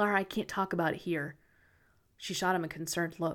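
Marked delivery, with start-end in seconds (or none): 0.0-1.4 lowered to a whisper. Reading a story where a character lowers his voice: lowered voice to a whisper. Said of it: "he lowered his voice to a whisper".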